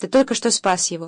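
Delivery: plain reading voice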